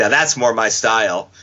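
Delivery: ordinary talk, nothing marked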